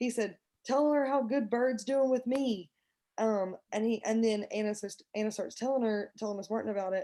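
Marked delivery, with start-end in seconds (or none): 0.7-2.7 mock, high, raised yell. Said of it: "he's yelling to Miss Martin".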